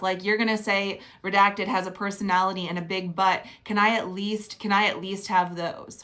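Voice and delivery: ordinary talk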